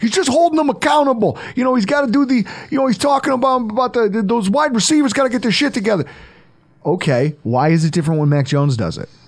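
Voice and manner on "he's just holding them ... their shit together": bad put-on Boston accent, very high pitch. Voicing people who defend a player screaming at his receivers; worst Bostonian accent ever. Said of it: "If I can do my worst Bostonian accent ever".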